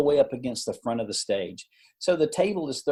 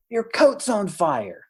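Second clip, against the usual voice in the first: put-on loud whisper, higher; 7 semitones higher than usual. Retelling a warning heard from the stage, imitating a loud whisper. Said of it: "a loud whisper from the stage saying".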